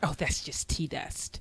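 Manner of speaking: mock-sneering tone. Speaker retells what someone said to them, mimicking a sneer. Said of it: "they said it with a sneer".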